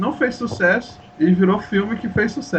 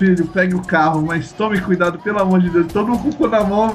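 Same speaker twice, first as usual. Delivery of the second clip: usual speaking voice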